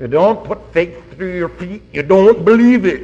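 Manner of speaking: high-pitched Scottish brogue. Quoting a saying his old pastor used to repeat, in a Scottish brogue. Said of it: "he said it with a Scotch brogue".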